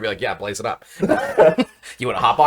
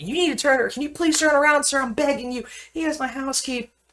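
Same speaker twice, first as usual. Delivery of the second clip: mock shrill, high, pleading, begging scream; 3 dB quieter than usual. Retelling how a woman in another car screamed at them, retelling a woman screaming. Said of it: "she starts screaming at me".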